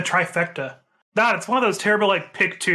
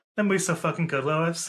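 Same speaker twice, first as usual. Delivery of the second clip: acted-out muttering under the breath; 4 dB quieter than usual. Recalling a man's remark about a movie, retelling a mutter under his breath. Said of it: "Just under his breath".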